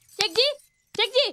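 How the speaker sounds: calling out loudly. Calling out someone's name repeatedly, shouting. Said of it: "अबे क्यों चिल्ला रही है?".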